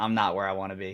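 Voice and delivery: normal talking voice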